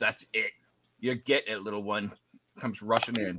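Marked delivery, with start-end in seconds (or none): 0.0-2.1 soft, pained growl through the hurt. The game master voices an enemy just hit by a firebolt, growling in pain. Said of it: "he kind of growls in pain and he goes".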